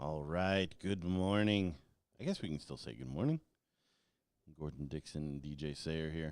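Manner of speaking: low, scratchy, raspy just-woken morning voice. A host says good morning and introduces themselves, in a low scratchy morning voice. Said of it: "I still got the morning voice. It's a little lower".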